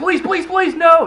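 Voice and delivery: very high, frantic, desperate scream. Narrating a video game highlight, reenacting their own screaming. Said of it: "I'm screaming".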